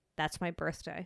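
acted deadpan delivery. The speaker recounts their own reply to a married couple: retelling a deadpan reply. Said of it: "And like a deadpan just like stared at them".

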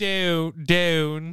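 put-on Cockney accent. Announcing an award winner in a put-on voice: Cockney accent.

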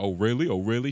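ordinary delivery

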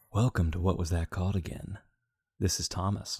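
soft whisper, close and quiet. Opening a podcast episode in an ASMR version, as asked: soft whisper, NPR soft. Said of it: "Just like whisper in their ear".

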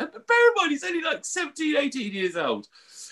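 laughing until crying.

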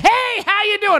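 overly energetic, very high, drawn-out, eager voice. Retelling greeting quiet dads at birthday parties: imitating overly energetic enthusiastic greeting. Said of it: "I'm overly energetic and enthusiastic".

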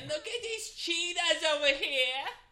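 very high, terrible, badly botched celebrity voice. While naming celebrities who might do the reading, try a terrible Fran Drescher impression. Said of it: "Is that your Fran Drescher?".

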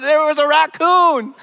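raccoon said high and loud, insistently. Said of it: "trying to prove to them".

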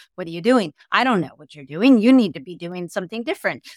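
frenzied, frenetic, ungrounded, rushed inner chatter. Describing two inner voices, voicing the anxious one: mock-frenetic inner voice. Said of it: "Like there's a much more frenetic to it".

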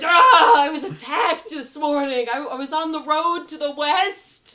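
very loud, high cry of pain. A bleeding man falling onto a party member tells of his attack, yelling. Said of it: "And he's just yelling".

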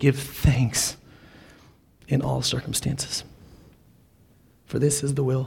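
tearful, choking up, crying through the words. Preaching, quoting 1 thessalonians 5:18 to listeners, choking up, crying. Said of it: "so that's why I'm crying".

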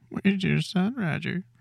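eerie, sadistic, very high-pitched ghost monster voice. Showing how a ghost sounds more sadistic in a high-pitched voice. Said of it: "when you do it in this high voice".

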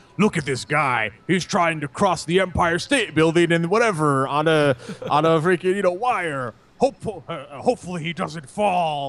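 eerie, creepy, put-on narrator voice, scary. Describing a show's footage, the speaker mimics the voice in the show: weird, scary voice. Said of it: "this weird, like, scary voice would be like".

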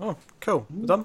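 surprised realization. Speaker realises the book discussion has ended, surprised. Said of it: "you sounded so surprised then".

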